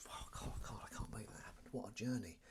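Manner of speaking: soft unvoiced awed whisper. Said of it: "it's like".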